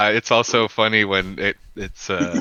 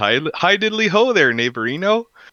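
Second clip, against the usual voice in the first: bright, friendly Canadian voice, pitched high; 8 semitones higher, 4 dB louder than usual. Voicing Huggy Bear's greeting to the others: imitating Huggy Bear, friendly Canadian voice. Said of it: "Huggy Bear says".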